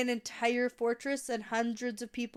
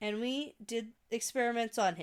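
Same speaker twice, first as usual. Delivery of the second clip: usual speaking voice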